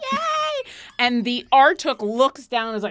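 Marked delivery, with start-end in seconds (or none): 0.1-0.7 rat voices cheering loudly, higher. Voicing rats swarming round a pirate's feet: noisy cheering rats. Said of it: "start making lots of noise".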